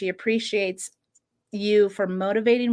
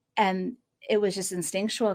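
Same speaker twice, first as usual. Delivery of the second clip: ordinary delivery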